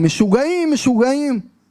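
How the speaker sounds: put-on held-in Hebrew shout. Retelling how a delegation head banged the table and yelled: retelling a shout in hebrew. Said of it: "empieza a gritar en hebreo".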